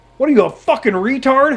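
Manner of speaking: loud, high-pitched scream. Retelling screaming at an old trucker: imitating someone screaming. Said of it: "I screamed".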